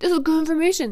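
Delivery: silly high dog voice. The speaker voices what her staring dog James is thinking, voicing James the dog. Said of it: "It's my dog voice".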